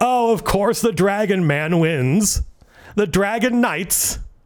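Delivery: put-on cheerful old man voice. Retelling what an old man said to the speaker, imitating a cheerful old man. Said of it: "he's kind of saying it in a um a, a cheerful manner".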